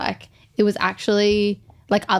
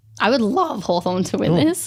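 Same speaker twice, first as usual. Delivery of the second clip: voice breaking and cracking. Naming a hoped-for winner between two teams, voice breaking. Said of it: "I think your voice just broke".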